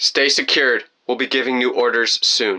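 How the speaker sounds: plain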